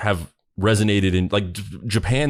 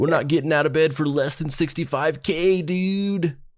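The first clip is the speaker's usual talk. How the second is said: higher, fake put-on American accent; 9 semitones higher than usual. Quoting the duo's demand to the manager: put-on American voice. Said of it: "they're doing it in the American voice".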